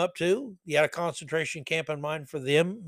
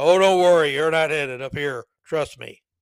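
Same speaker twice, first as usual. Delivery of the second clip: thunderous voice, louder; 8 dB louder than usual. Mocking someone who would correct God's mistakes, God answers in a thunderous voice. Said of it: "a thunderous voice answering".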